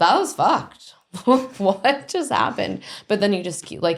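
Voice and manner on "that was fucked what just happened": play-acted, careless, flippant sarcasm, high and swooping. Acting out how the three of them react to a bad event: imitating a sarcastic, flippant reaction. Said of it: "a sarcastic, flippant".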